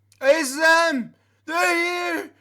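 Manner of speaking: put-on very high, drawn-out drunken holler. Voicing a drunk character spotting the party across a room: incredibly drunk Rourke shouting. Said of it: "an incredibly drunk Rourke shout".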